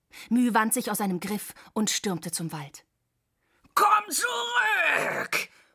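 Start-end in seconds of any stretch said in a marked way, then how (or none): 3.8-5.5 very high, howled cry. The cyborg calls after Müh as she escapes toward the forest, howling. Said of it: "Heulte der Cyborg hinter ihr".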